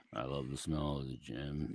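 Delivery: low, hushed monotone. Imitating what Larry Brown always used to say: monotone Larry Brown impression. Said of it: "In a very monotone way".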